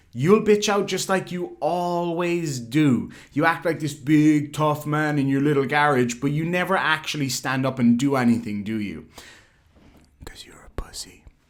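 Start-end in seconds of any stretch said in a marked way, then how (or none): 10.2-11.2 breathy, hushed whispered aside. Taunting an opponent, dropping the insult for YouTube: whispering. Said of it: "had to whisper".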